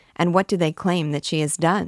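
plain reading voice

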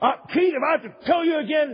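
high, loud, threatening yell.

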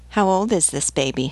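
usual speaking voice

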